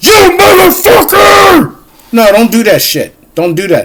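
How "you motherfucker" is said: very high, raging, angry shriek. Warning listeners not to yell at people, demonstrating the scream to avoid. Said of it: "Don't scream like".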